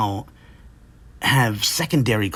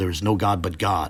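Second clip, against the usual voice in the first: usual speaking voice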